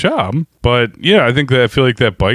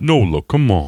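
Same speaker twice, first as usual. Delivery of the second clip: put-on rugged cowboy voice, pitched lower; 4 semitones lower than usual. Imitating a film character in a Marlboro Man voice. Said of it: "real Marlboro Man kind of voice".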